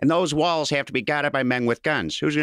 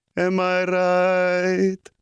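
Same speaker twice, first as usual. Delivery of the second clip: put-on old Italian priest voice, higher; 4 semitones higher than usual.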